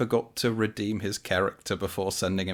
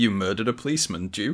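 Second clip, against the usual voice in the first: usual speaking voice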